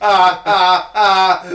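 gloating robot cackle, high and loud.

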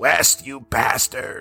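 eerie, unsettling, creepy horror-movie voice. Quoting a line from the most famous Reanimator scene, in a creepy voice. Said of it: "it's that creepy voice before that he goes".

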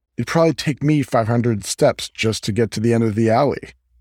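ordinary delivery

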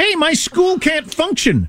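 complaining voice of a Spanish speaker.

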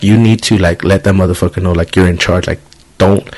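plain

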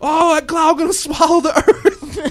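sudden shriek blurted out at a very high pitch. Retelling a moviegoer's outburst in a theater: imitating a man screaming. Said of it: "this dude leaps up behind me and just screams out".

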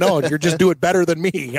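plain

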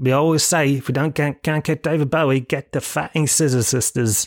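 clumsy, bad, put-on English accent. Quoting what they always say about booking acts, in a bad English accent. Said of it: "I don't know why I did that in a bad English accent".

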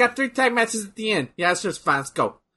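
put-on New York accent. Asking whether a wrestling card looks fine, in a put-on new york accent. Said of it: "Why am I talking like they're, they're from New York?".

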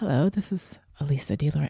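put-on very low, soft, sultry, sexy voice. Recalling testing the mics in a conference room, the speaker puts on a sexy voice. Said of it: "this whole sexy voice thing".

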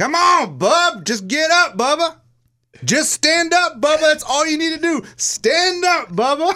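mock coach hollering, pitched way up, high, drawn-out. Retelling a friend acting like a wrestler's coach: imitating a coach yelling. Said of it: "yelling what his coach would normally yell".

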